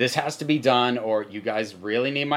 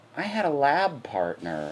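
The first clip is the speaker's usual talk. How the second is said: acted-out yearning, wistful, longing tone. Describing an episode, quoting a character's line while imitating a longing tone. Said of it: "there's this longing in her voice".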